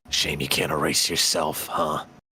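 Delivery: voiced stage whisper, close to the ear. Leaning into the ear of a man bleeding out, half-whispering to him. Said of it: "I'll whisper to him as he's bleeding out".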